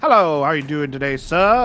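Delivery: polite, helpful, mechanical robot butler voice. Describing a robot from the Fallout series, doing its voice: Mister Handy robot voice. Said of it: "this robot ... That kind of voice".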